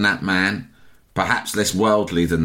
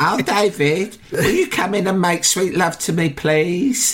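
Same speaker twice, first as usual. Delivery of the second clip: put-on, high-pitched posh woman's voice; 10 semitones higher than usual. Acting out a seduction as part of a joke story: imitating a posh woman's voice. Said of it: "done an impression like".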